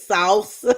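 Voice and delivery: salsa said with real, heavy weight. Imitating how a man says salsa: Doctor Umar impression. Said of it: "That's how he says it".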